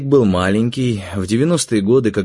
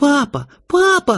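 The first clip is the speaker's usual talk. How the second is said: very high, tearful, joyful yell. Narrating a novel, a boy cries out to his dad: yelling with tears of joy. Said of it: "едва ли не со слезами радости на глазах вопил".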